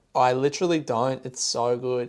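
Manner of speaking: ordinary delivery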